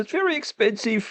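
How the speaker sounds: very high crying voice, on the edge of tears. Mocking a woman quoted in a news report, in a mock crying voice. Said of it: "A cry in her voice".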